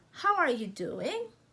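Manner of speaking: voice climbs at the end on doing. Explaining English intonation, demonstrating a question with rising intonation at the end. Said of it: "we like raise our voice at the final".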